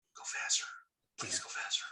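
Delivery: hushed, pleading whisper close to the ear. Whispering in character into an elk's ear, urging it on: whispering. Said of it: "I lean over and whisper in Eddie's or Riona's".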